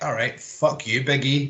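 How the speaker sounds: ordinary delivery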